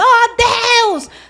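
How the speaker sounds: very high, very loud yelled cry. Imitating people who pray by shouting at God: imitating people shouting in prayer.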